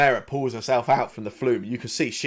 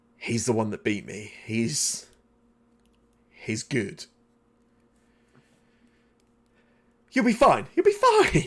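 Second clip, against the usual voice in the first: confiding stage half-whisper. Game master voices Mera coming up alongside Kays, Mera half-whispering. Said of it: "and she whispers in your ear".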